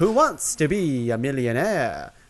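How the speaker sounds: vampire character voice. Reading out a list of game shows to rank, in a Dracula voice. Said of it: "I'm doing a Dracula voice there".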